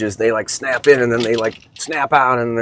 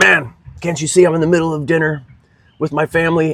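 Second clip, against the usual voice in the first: angry, snapping, pitched-up voice; 5 semitones higher than usual. Retelling how the father snapped at a fan during dinner: imitating dad snapping at someone. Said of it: "snapping on this guy".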